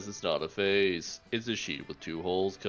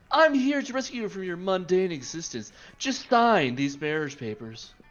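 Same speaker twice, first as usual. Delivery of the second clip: put-on anime pretty-boy voice; 8 semitones higher than usual. Voicing an interdimensional prince after being told to go anime: anime bishonen voice. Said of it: "Go for anime".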